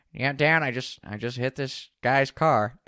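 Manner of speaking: put-on raspy, nasal man's voice. Retelling Grayson calling his dad after hitting a car, in Grayson's raspy, nasally voice. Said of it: "a little bit of a raspy, nasally voice".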